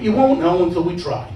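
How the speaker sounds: ordinary delivery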